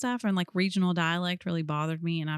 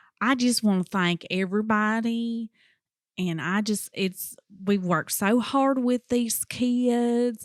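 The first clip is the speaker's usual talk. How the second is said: put-on thick, slow Kentucky drawl, "kids" stretched to two syllables; 4 semitones higher, 4 dB louder than usual. Retelling an award-winning teacher's acceptance speech: imitating a thick Kentucky accent. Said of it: "Kids does have two syllables".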